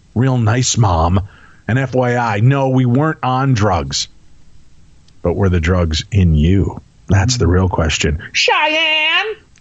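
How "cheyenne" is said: very high, squawking parrot-like voice. Telling a story about her mom, calling out a name, parrot-like call of a name. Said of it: "You kind of sound like a parrot when you do that".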